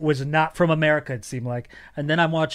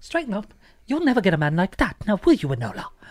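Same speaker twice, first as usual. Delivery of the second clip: put-on, swooping, animated woman's voice; 4 semitones higher than usual. Recalling being a kid, doing a woman's lines: imitating a woman's voice. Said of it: "you can do females".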